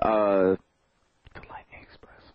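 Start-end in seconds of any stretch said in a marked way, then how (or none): 1.3-2.2 soft, unvoiced whisper. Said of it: "I'm not gonna whisper it to you".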